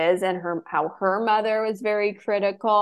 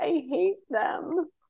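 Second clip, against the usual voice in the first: mock crying, higher and quieter; 8 semitones higher, 4 dB quieter than usual. Retelling a reality show scene where Heather cries: imitating Heather crying. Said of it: "crying and she's like".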